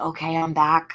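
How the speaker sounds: speaking very quietly. Showing how quietly to speak when coming back: really quiet voice. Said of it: "I'll be really quiet like this".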